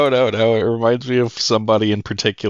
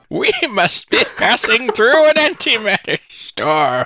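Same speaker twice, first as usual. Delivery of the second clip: put-on very high, quavering, shaky old man voice; 11 semitones higher than usual. During a group script reading, someone voices a character in an old man voice. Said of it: "which one of you can do an old man voice?".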